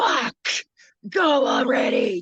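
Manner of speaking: angry, impatient, loud, swooping furious scream. Retelling what a man screamed when asked to let her go: imitating someone screaming. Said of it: "he just screamed".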